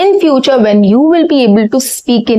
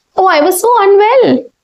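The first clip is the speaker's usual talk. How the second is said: cheerful, bright, happy tone, pitched up; 7 semitones higher than usual. Speaker showing the wrong way to break sad news: happy tone. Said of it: "break a sad news with a happy tone".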